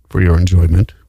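deep, low put-on voice. Presenting whiskey to someone, speaking in a put-on low voice. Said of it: "Low voice".

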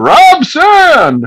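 acted-out shout. Retelling how a man took the paper and called out the name: retelling a yell into the room. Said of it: "just like yells into the room".

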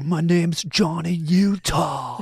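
shrill, high-pitched, very slow, drawn-out shout. Discussing a film, a speaker acts out the character introducing himself: Johnny Utah, mock-shouting. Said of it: "He's like shouting it".

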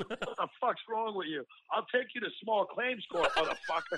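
play-acted angry tirade, yelling and venting hard. Acting out calling the hospital about a food bill: imitating someone yelling. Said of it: "I start yelling".

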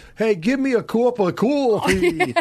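put-on fumbled Brooklyn accent, a bit high. Recalling a former office-mate's attempts, imitating John Oliver's bad Brooklyn accent. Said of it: "try to do a Brooklyn accent with his English mouth".

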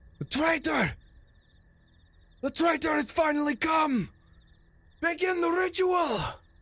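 shrill, very high yelling. Game master voices scouts pointing at the players, yelling.

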